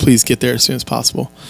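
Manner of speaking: put-on weeping voice. Retelling a passenger's urgent request to hurry: imitating a weeping plea. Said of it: "She's already weeping. Like".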